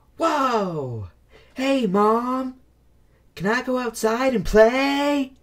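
goofy, super enthusiastic, shrill, loud, slow, drawn out. Imitating the acting in old nineties commercials: imitating super enthusiastic commercial acting. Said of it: "just super enthusiastic".

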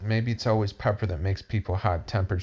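ordinary talk

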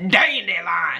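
dandelion pushed up from the back of the throat. Teaching a group to say a word, pushing dandelion from the throat. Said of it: "You got to get it from the back of the throat".

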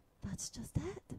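hushed, soft, breathy near-whisper. After being told she clearly did something wrong, she answers: said softly. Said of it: "Gillian said softly".

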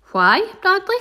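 astonished, wondering tone. Carla replies to Bradley's remark: astonished. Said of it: "Carla said with astonishment".

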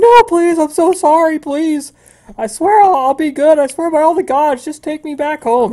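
put-on very high, loud, sobbing child voice. Retelling how the kid reacts when she grabs his face, imitating a crying, begging kid. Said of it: "He's like crying, snots running out".

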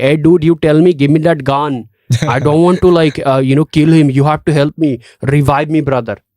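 English in a played-up Indian accent. Speaker showing how he jokes with others, speaking in an indian accent. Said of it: "যখন আমি ইন্ডিয়ান অ্যাকসেন্টে কথা বলতেছি".

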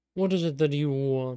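loud, projected spirit character voice. Voicing the contracted spirit Seraph answering the others, in a low Seraph voice. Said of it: "It was a low voice like this".

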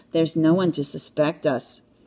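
plain

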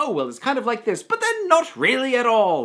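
sing-song put-on British accent, slipping in. Talking about visual adaptations, slipping into a British accent. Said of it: "I don't know why I got British with that accent".

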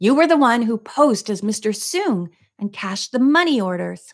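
ordinary delivery

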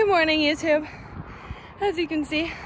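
panting and winded. Vlogger greeting YouTube mid trail run, just after running up a hill: out of breath. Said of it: "I just ran up a hill and I can't breathe".

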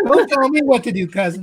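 defiant tone. Voicing a character who looks back at his commander: Melis talking back. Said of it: "he looks back and goes".

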